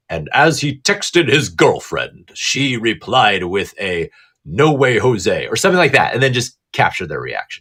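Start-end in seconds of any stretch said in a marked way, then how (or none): 0.1-5.4 slow radio narrator voice. Showing how to narrate what someone is doing: radio narration voice. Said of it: "in your radio narration voice".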